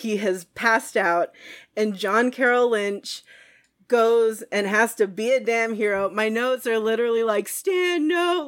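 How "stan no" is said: high, yelled, shouted pleading. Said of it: "like, in all caps".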